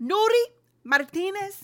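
put-on Puerto Rican accent. Naming the resigning LA County president, in a put-on Puerto Rican accent. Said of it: "I was giving you Puerto Rican Rickon".

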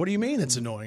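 plain

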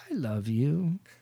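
eerie, creepy talking-doll voice. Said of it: "weird, creepy shit".

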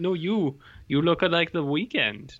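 put-on Scandinavian-sounding accent. Retelling what a man told them, the speaker does his Scandinavian accent. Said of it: "That was his Scandinavian accent".

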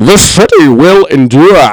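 muffled, as if spoken through a hand. Recalling the villain's line, speaker tries it: Bane voice, mouth covered. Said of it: "you have to put your mouth over".

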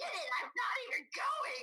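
high, furious, fed-up, angry outburst. Retelling an angry reaction to a friend's message: imitating her own angry outburst. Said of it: "I'm so angry".

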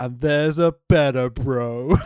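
acted, solemn, dead-serious, extra somber delivery. Retelling a wrestler's promo: imitating a somber promo. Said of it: "Robbie pauses to look extra somber and then continues".

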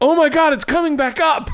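mock piercing top-of-the-lungs holler, very high, loud. Retelling a joke yelled on a boat at sunset, imitating Chris Quinn shouting. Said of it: "at the top of his lungs goes".

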